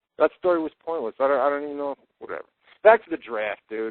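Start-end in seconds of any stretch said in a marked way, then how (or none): none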